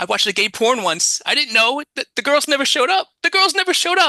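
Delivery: put-on frantic, very high, climbing panicked blurt. Retelling a movie scene where a character suddenly stands up: imitating a panicked outburst. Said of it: "in, like, a panic, and he says".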